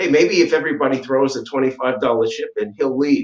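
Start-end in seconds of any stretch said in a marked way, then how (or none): none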